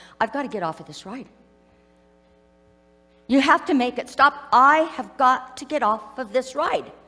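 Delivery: panicky, very anxious, pleading, begging voice. Retelling what the speaker's husband said on the ride: retelling a very anxious plea. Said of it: "in a very anxious voice".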